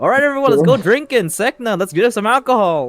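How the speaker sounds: booming, very loud, very high call. Player character turns to sekna and calls out to everyone: really loud voice. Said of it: "in a really loud voice".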